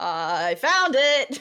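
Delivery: loud, high-pitched yell. A player voicing their character calling out to the team mid-game, shouting. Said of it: "As I'm shouting at the team".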